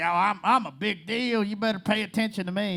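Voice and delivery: put-on self-important Southern accent. Mocking self-important big shots roaming a festival, imitating big shots in a southern accent. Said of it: "They probably don't have a Southern accent".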